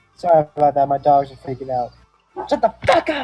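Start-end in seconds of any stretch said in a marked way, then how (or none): 2.5-3.3 furious yell, much higher, louder. Interrupting the conversation to yell at the dogs freaking out: angry shout. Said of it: "I need to calm down now".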